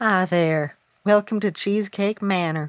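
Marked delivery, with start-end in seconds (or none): 1.0-2.7 put-on Southern US accent. Trying out a voice for Cheesecake Cookie; Cheesecake Cookie southern voice. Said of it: "I wonder if I should try like a southern voice".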